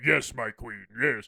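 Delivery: deep, loud, dark rumbling villain voice. Describing a show character, a speaker mimics him answering in a deep voice. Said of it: "he's also got like a really like deep voice".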